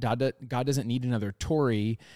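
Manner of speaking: normal talking voice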